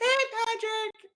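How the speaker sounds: very high-pitched voice. Imitating how a shorter man always greets Patrick, in a high-pitched voice. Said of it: "becomes really high pitched".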